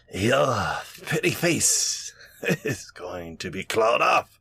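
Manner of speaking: rough-edged rasping voice throughout. The narrator voices a clawing female enemy threatening the party: raspy voice. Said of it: "her voice is going to kind of take on a, a, a raspy tone".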